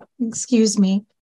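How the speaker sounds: quiet, soft-spoken voice. A player's character walks up to a shaken teenage elf boy, very soft voice. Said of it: "just very softly be like".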